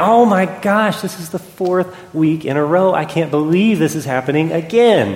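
put-on irritated, exasperated, frustrated, fed-up grumble. Acting out a churchgoer hearing a child cry again: imitating a frustrated churchgoer. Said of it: "you start getting frustrated".

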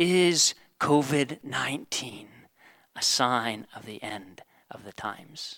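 dark, slow, ominous and foreboding voice. Retelling what a lady in a video asked: imitating an ominous voice. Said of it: "asked in an ominous voice".

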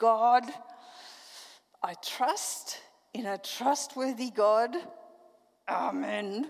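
clenched-teeth speech. Retelling a prayer made lying face down on the surgery table, through gritted teeth. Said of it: "So I pray through gritted teeth".

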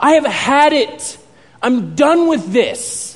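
furious outburst, very slow, high, drawn out. Retelling a movie scene where the student has had enough: imitating a furious outburst. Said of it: "And he's furious".

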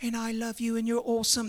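put-on posh English accent. Mocking how people picture Jesus talking: mock English accent as Jesus. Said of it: "Everybody thinks Jesus has the English accent".

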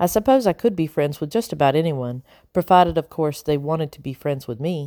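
ordinary delivery

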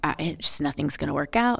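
defeated, resigned, negative attitude. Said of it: "if you go into it being like".

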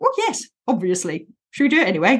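matter-of-fact, pragmatic, brisk, sing-song tone. Demonstrating the inner voice to use for boring tasks, pragmatic let's-go voice. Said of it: "Let's go kind of voice".

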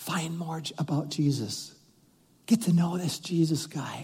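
very quiet, soft half-whisper. Acting out the Holy Spirit half-whispering to a new believer: half-whispering. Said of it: "And the whisper, it goes like this".

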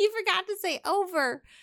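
high, nerdy little giggling laugh.

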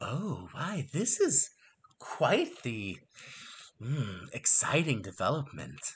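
calming voice. Narrating a voice that a player's character hears nearby, in a very calming voice. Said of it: "another one of those very calming voices".

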